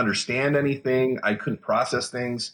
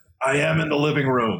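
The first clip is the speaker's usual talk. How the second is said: mock spiteful, mean, nasty scream; 3 semitones higher than usual. Retelling the reply to someone who said to lie down, retelling a mean, nasty scream. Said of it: "I screamed like a very mean, nasty person".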